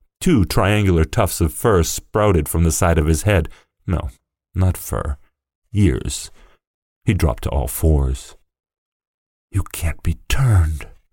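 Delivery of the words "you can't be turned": hushed stage whisper. A boy speaks to a man turning into a creature, whispered. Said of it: "whispered the boy".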